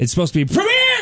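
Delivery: premier shouted high with mock emphasis. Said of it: "capitalized is pronounced Premier".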